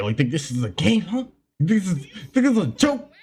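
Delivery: heated, pissed-off, rising tone. Retelling what an angry man said to him: imitating someone getting pissed. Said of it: "real pissed".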